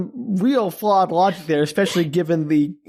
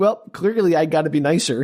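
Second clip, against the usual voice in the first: normal talking voice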